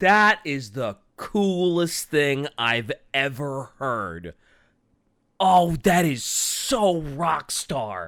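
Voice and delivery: said with heavy emphasis. Reacting with delight to what the other speaker shared: heavy emphasis. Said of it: "you threw a lot of, a lot of emphasis in that".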